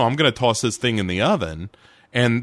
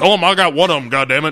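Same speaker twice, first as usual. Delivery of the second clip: put-on high, hollering yell; 5 semitones higher, 4 dB louder than usual. After people broke into the house, Mulder shouts from the background; retelling Mulder's yell. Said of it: "Mulder's in the background yelling like".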